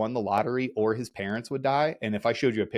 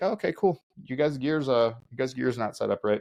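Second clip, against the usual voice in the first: put-on, completely calm, easy, unruffled instructor voice. Retelling an instructor's order after dumping gear: imitating an instructor speaking calmly. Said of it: "He just very calmly was like".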